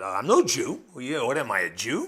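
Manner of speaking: acted scornful, sarcastic tone. Speaker retells how a ruler answered the accusers, retelling a sarcastic retort. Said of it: "you got to hear the sarcasm there".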